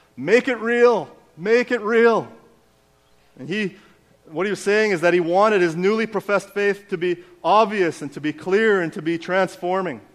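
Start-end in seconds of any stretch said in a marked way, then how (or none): 0.2-2.3 high, slow, drawn-out shout rising upward. Recounting a friend coming up out of the baptism water, the speaker retells his shout. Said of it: "he looked up and shouted".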